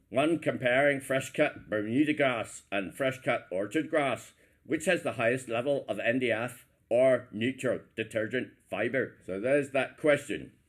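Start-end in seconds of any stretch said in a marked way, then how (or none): 0.1-9.1 Northern Irish accent. Quiz host repeating a quiz question, in an Ulster Irish accent. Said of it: "going to be with the Ulster Irish accent".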